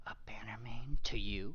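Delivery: hushed whisper. A game character looks left and right, then answers: whispering. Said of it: "looks left and right and then whispers".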